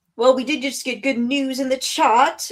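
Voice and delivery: bad fake British accent. Host speaking to the chat, in a terrible British accent. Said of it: "I say with my terrible British accent".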